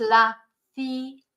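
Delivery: "la ciruela" said slowly, syllable by syllable. Teaching Spanish learners how to say a word, said slowly. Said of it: "Say it slowly".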